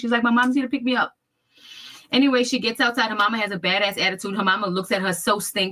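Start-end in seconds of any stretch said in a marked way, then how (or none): 0.2-1.1 weepy, sobbing, crying, tearful voice. Retelling how the daughter ran in saying her mama came: imitating someone crying. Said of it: "She's crying".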